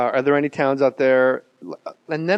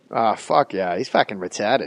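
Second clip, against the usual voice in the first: put-on South Boston accent; 5 semitones lower than usual. After bragging about nailing the accent of a Southie guy, South Boston accent. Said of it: "I can fucking nail that accent".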